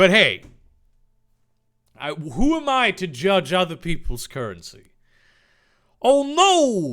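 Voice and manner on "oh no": alarmed yelp pitched way up, loud, drawn-out "no". Reading a silly story aloud, voicing Dave: exclaiming in alarm. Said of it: "Dave exclaimed".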